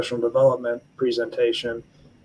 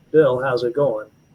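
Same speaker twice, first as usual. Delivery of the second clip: put-on, very distinctive Southern gentleman accent. Retelling how the colonel greeted Bill out of the blue, in Colonel Puckett's Southern gentleman accent. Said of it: "a very distinctive Southern gentleman accent".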